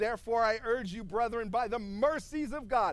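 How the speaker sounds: ordinary talk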